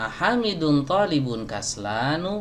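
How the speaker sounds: kaslanu said with upward lift. Arabic lesson, teacher repeating a student's sentence: questioning intonation. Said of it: "intonasinya bertanya ... gitu kan nanya ya kan?".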